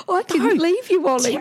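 very high-pitched pretend sobbing, fake crying. A mother retells pretending to cry to her child at his bed, pretend crying. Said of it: "I started to pretend I'm crying".

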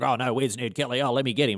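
playful, put-on joking alarm. Retelling how Kennedy pretended to go along with the gang: imitating Kennedy playing along as a joke. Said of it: "like this".

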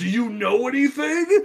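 high, demanding, half-hollered mild yell. Retelling a scene where a villain yells at someone: imitating Steppenwolf yelling. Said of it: "he's yelling at the dinner like".

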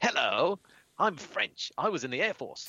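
put-on almost proper English accent. Retelling what an old french pilot said on meeting: imitating received pronunciation. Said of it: "spoke exactly like that, almost in received pronunciation".

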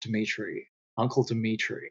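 very quiet, soft, almost hushed put-on star voice. Getting into an actor's voice by repeating a name: Nicolas Cage impression. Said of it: "for me to get into Nicolas Cage, it is Uncle Dimitri, because the way he says".

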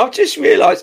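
talking through laughter. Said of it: "I'm laughing because your snipper comments".

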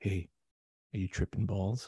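soft, hushed half-whisper. Retelling how the ER doctor checked on the kid: imitating a half-whisper. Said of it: "he whispers into the, the kid's ear".

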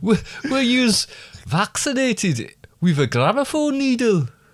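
put-on German accent. Repeating your line, this time going fully in a german accent. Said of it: "I was going in a German accent".

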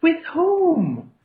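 very high, stilted delivery, "whom" drawn out. Retelling a movie scene about a train stop: Mark Wahlberg impression. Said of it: "doing the Wahlberg impression".

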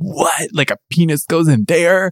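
mock grossed-out, shocked, high-pitched, repulsed disbelief. Retelling a reaction in a first sex ed class: retelling own repulsed reaction.

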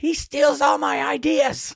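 acted-out, very high, raspy, rough, drawn-out accusing holler. Retelling what a homeless lady yelled on the street: imitating a homeless lady yelling. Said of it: "started yelling at him".

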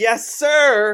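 shrill, very high, loud yell. Retelling how a player yelled back at an opponent: imitating Draymond yelling loudly. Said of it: "Draymond yelled really loud".

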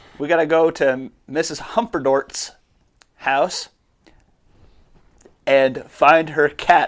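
slow, suppressing a laugh, keeping a straight face. Announcing a job to find someone's cat, holding back laughter. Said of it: "I'm trying really hard to say that without laughing".

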